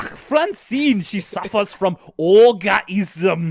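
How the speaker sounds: very slow, loud villain voice. Explaining what Doctor Zimmer is doing, the speaker mimics him: Doctor Zimmer voice. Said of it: "Zimmer really sounds like a bad guy in Wolfenstein".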